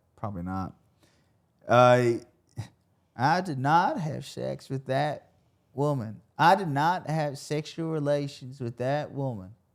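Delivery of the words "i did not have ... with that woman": slow, deliberate, every word weighted. Trying to recall how Bill Clinton sounds: Bill Clinton impression. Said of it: "Did I nail it?".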